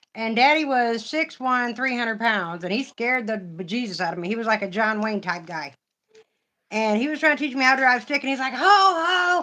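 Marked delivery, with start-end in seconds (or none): 8.6-9.5 mock stern father's high yell, "ho" stretched long. Retelling her dad teaching her to drive stick: retelling a father's yell. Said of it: "and he's yelling at me".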